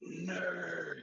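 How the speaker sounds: drawn-out half-whisper. Half-whispering an insult to another player in the game: half-whispering. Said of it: "I just whisper to, uh, Scott".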